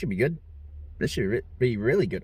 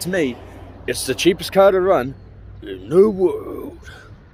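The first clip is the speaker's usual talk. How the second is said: bad put-on voice, loud and slow; 4 semitones higher, 7 dB louder than usual. Showing off a car with a bad Jeremy Clarkson impression. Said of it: "worst Jeremy Clarkson impression ever".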